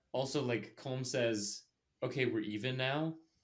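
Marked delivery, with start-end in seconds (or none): none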